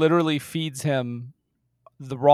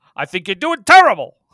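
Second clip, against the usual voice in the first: loud, higher, scornful mock game-show host voice. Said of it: "Regis would give people the business".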